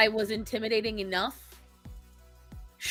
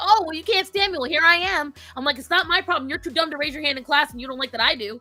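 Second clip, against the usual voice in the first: acted-out screaming; 6 semitones higher, 4 dB louder than usual. Retelling confronting a classmate in the lunchroom: imitating herself screaming. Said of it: "I started screaming at him".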